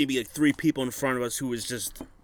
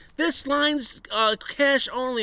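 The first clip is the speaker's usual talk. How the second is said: put-on very high screech, words stretched long; 11 semitones higher than usual. Retelling being told the line was cash only, the speaker voices her: retelling a scream. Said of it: "So then she screams".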